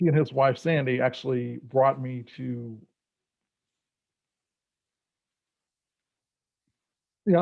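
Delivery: choking up mid-sentence, voice breaking, starting to cry. Recalling a mentor and his wife bringing them to C T S: starting to cry. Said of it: "I thought I was gonna make it through this without crying".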